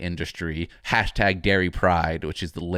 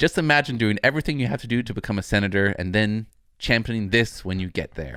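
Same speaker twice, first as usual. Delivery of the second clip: normal talking voice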